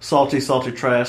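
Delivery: ordinary talk, nothing marked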